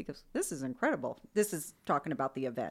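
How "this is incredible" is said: plain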